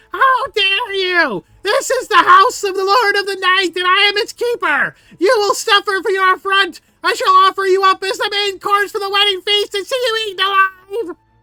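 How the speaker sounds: very loud, high-pitched, shrill, raging furious shout. Voicing the little keeper of the house, shouting furiously at the party. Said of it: "he looks very pissed off as he shouts".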